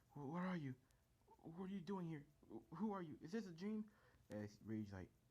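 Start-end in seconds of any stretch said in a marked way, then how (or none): 0.2-3.9 put-on fear, much higher. Retelling a scene where one character confronts another, acting scared. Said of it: "he's scared".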